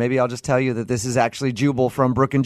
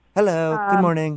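mock friendly tone, higher pitched; 5 semitones higher than usual. Imitating the front desk lady's morning greeting: imitating the front desk lady's greeting. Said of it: "Her words".

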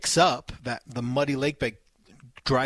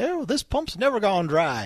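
put-on hokey old-time narrator voice, much higher; 8 semitones higher than usual. Speaker recalling a story about an old pump, hokey old-town narrator voice. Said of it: "that kind of old town hokey".

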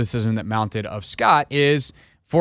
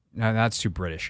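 ordinary talk, nothing marked

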